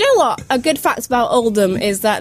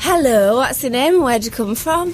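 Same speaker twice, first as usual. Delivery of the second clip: sexy, put-on northern English accent; 2 semitones higher than usual. Greeting the hosts as mystery guest number two in a guessing game, sexy northern accent. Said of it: "quite a sexy northern accent".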